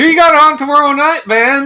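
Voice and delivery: put-on very high-pitched, loud North Carolina accent. Retelling what a channel host asked last night: Fruitcake Tony North Carolina accent. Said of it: "my Fruitcake Tony, uh, North Carolina accent".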